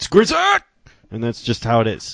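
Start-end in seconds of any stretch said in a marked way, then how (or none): 0.0-0.6 very high, emphatic exclaimed shout. Reading out an email sender's name the special way, emphatic name call. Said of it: "I have to say that like that every time".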